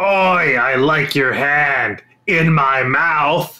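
loud, booming monster voice. A game master voicing the monster as it starts its turn, Xanathar voice. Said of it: "it is going to start by saying".

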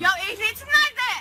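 shouting. A police officer demands to see someone's licence, yelling. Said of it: "Bana sorma ehliyetini bağırma".

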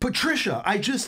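put-on very high, fed-up, exasperated voice. Doing an impression of Matt King when frustrated, mock-frustrated Matt King impression. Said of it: "this is Matt frustrated".

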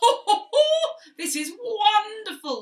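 shrill, booming, high laughter of delight through words. Narrator reads Midas after his touch turns a table to gold: laughing while speaking. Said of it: "laughed Midas".

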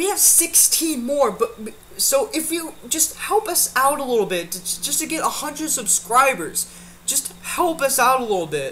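tearful, on the verge of crying. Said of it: "I'm like almost crying right now".

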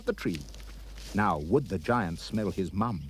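plain reading voice

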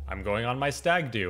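ordinary delivery

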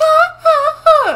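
put-on mocking laugh. Playing a game, mocking the Peach player's early trash talk, imitating Peach's mocking laugh. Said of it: "She's like".

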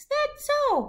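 tiny, squeaky little critter voice, very high. Reading a story aloud, as Shrew replies to Gnu: Shrew's tiny shrew voice. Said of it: "said Shrew in his tiny shrew voice".

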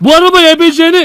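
loud, high-pitched shout. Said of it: "ne bağırıyorsun bana ya".

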